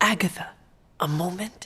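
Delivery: whispered, hushed. Asking Agatha for a moment, whispering. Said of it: "And why are we whispering?".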